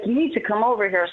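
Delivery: ordinary delivery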